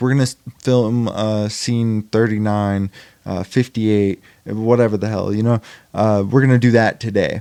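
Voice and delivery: plain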